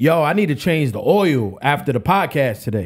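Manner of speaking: too-hearty, half-awake, delirious chatter. Retelling what he said to her at five in the morning, retelling own loud talking. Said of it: "like in this tone".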